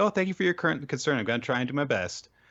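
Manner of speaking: forced, grin-and-bear-it polite courtesy. Retelling how a character grins and bears an insult: imitating a forced smiling reply. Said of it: "She puts on a smile and she's like".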